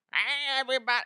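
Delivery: put-on very high-pitched old-lady voice. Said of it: "That's like an old lady".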